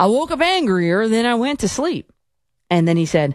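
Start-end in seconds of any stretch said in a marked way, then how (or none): 0.0-2.1 put-on Texas accent, pitched up. Repeat what he said about waking up, from your notes, in a put-on Texas accent. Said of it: "I'm doing the Texas accent".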